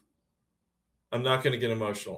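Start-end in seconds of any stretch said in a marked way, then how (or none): 1.1-2.2 fast, repeated, self-reassuring rapid speech. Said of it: "I'm saying to myself".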